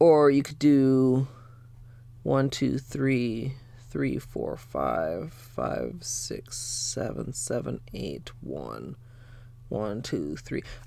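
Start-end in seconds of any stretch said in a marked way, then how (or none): 2.2-10.6 slow, whispered mumbling under the breath. Counting out a color sequence to viewers, mumbling numbers. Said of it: "my number mumbling".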